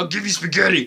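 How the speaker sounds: coaxing, wheedling villain voice. Retelling how Bowser phoned Mario: imitating Bowser. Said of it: "Bowser's just like".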